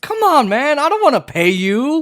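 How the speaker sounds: put-on sarcastic tone. Playing a railroad tycoon refusing workers sick leave: mock sarcastic boss voice. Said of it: "I'm being sarcastic".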